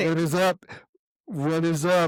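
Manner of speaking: playful mocking mimicry in high, teasing voice. Repeating the other speaker's greeting back to them: mocking imitation of a greeting. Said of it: "Are you trying to mock me".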